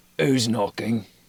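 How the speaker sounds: gruff answering voice. A game narrator voices someone answering a knock, in a gruff voice. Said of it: "You hear a gruff voice respond".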